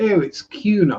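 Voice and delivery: upper-class English pronunciation. Showing how a posh english person would pronounce a name: posh english accent. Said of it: "pronounced like a posh English person would say it".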